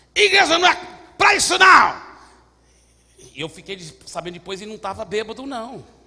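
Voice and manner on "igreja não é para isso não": very loud, high-pitched, rebuking shout. Telling of a man who came down from the back, retelling a man's yell. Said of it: "apontando o dedo desse jeito".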